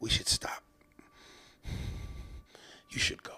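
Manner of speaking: put-on heavy breathing. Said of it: "he just starts breathing heavy".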